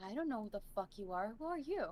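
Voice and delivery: revolted, disgusted, repulsed tone. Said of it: "look at him, like, disgusted and be like".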